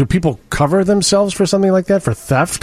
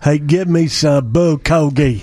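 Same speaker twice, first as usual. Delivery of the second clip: put-on Alabama Southern accent, much slower; 3 semitones lower than usual. Joking in a group about accents, imitating people from alabama, southern accent. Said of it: "people from Alabama go".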